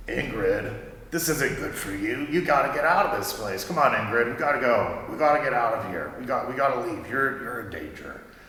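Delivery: comforting, reassuring mentor voice. Voicing a remembered mentor urging the player character to flee: comforting voice of Gus. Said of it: "you recognize that as the voice of your old mentor, Gus".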